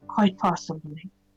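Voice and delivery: hushed, quiet voice. A player speaks his character's reply to another character, in a hushed tone. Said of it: "simply say in a hushed tone to Crocus".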